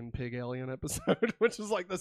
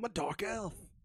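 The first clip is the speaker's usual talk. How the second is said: put-on mumbling angry voice, higher; 6 semitones higher than usual. Mocking how an actor talks, as if marbles in mouth: Eccleston voice, marbles in mouth. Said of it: "that's him".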